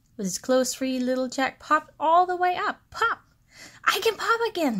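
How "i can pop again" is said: joyful, happy, high-pitched exclamation. Just freed from being stuck in his box, crying out happily. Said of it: "he cried happily".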